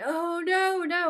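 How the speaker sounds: all-out, high-pitched screaming cry. Retelling a tv scene where a character panics: imitating someone screaming. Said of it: "and he's screaming".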